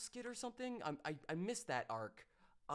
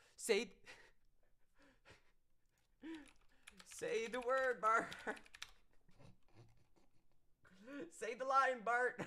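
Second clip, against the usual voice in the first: high, pitched-up egging-on tone; 7 semitones higher, 4 dB louder than usual. Retelling what a comedian says on stage: imitating Dave Chappelle. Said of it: "like Dave Chappelle is like".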